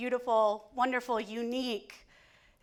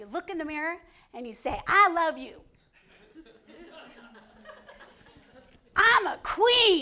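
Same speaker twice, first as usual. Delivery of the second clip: put-on sassy Southern accent, raised, laughing; 4 semitones higher, 6 dB louder than usual. Retelling how a grandmother said to love yourself: imitating grandma's sassy Southern accent.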